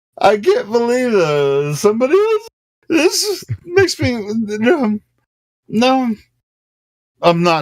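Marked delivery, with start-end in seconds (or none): 0.2-6.2 high, wavering, put-on choked-up fake crying. Pretending to get choked up over the community: pretending to tear up. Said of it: "I'm acting like I'm tearing up".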